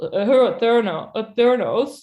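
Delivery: odd halting put-on voice. Imitating how she talks in her weird deep voice. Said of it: "I'll try to do it".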